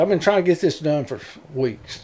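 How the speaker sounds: normal talking voice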